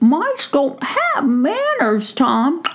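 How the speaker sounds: tiny, high-pitched, squeaky little mouse voice. Reading a story, the narrator voices the mouse answering the gnome: squeaky Brisbane mouse voice. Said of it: "He recognized that it was [name] the mouse, ... [name] heard a squeaky voice right outside of the coop door".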